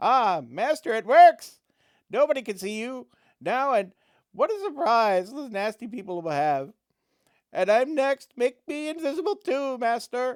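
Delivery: crackling, very high, loud, gleeful goblin cackle. The goblin sees its master turn invisible, crackling gleeful goblin voice. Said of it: "The goblin crackles with glee".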